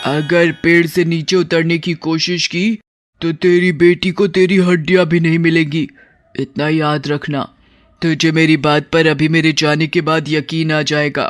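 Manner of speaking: domineering, bold, swaggering, menacing cartoon witch voice. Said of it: "मैं दबंग चुड़ैल हूँ। / चल, अब मैं तुझे वहां लेकर जाऊंगी, / चुड़ैल उस नाव में सवार तीनों लोगों को बचा लेती है।".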